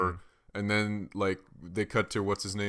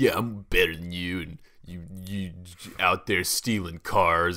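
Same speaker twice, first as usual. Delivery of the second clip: loud, dull, stern commander voice; 5 dB louder than usual. Retelling a dull commander's line from the movie: Scott Eastwood impression. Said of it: "that's actually not a bad impression of Scott Eastwood".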